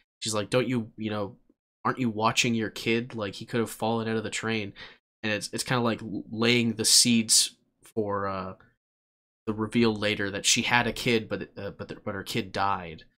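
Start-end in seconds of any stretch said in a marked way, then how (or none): none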